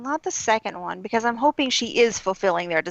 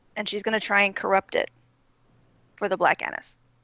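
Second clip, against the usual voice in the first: ordinary delivery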